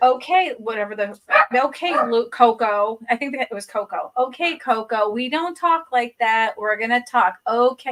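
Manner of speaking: plain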